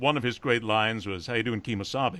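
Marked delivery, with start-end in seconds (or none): none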